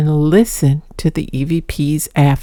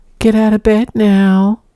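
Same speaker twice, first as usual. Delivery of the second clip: tiny, small, high-pitched pet voice; 4 semitones higher than usual. Retelling what a cat said in a video: Magic's little high-pitched voice. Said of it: "with this little high-pitched voice".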